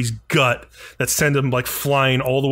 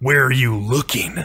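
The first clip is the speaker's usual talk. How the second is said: put-on guttural character voice. Retelling a fight, voicing Deku's reply to Todoroki's attack; guttural Deku voice. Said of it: "like in this really guttural voice".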